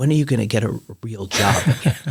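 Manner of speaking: imitated whisper. Retelling a father's question to the speaker: imitating father whispering. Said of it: "would sort of whisper to me".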